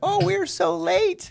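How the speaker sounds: very high, slow mock panic. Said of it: "When you told me".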